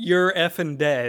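restrained, mild put-on wrestler-style scream. Retelling a wrestling match finish, imitating someone screaming. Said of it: "he just screams".

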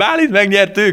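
sobbing, very high, loud, tearful cry of joy. Retelling phoning the boss with the news; acting out sobbing and shouting. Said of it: "szintén zokogva is kiabálva".

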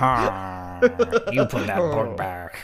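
slow, drawn-out, unpleasant, pitch swooping up and down. Imagining the unpleasant librarian scolding someone: Madam Pince voice. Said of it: "Could you imagine?".

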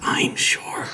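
rasping creature voice. Imagining a joke dwarf ring wraith and speaking as it, raspy dwarf ring wraith voice. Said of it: "would say in a raspy voice".

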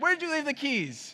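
put-on, very high-pitched, angry voice. Retelling a spouse's morning text: imitating an angry text. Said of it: "you have to read it in the tone that's, like, angry".

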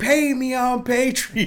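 very slow, loud, shrill yell pitched way up. Picturing the other person marching on their rooftop at the neighbors: mock-yelling.

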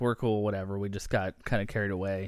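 ordinary talk

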